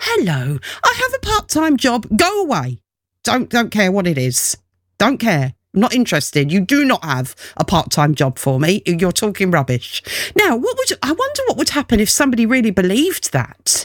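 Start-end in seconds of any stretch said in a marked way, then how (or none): 0.0-2.1 mock condescending, high, sing-song patronising voice. Speaker retells what a woman said to him, imitating a patronising voice. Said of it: "in that patronising voice".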